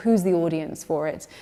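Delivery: ordinary talk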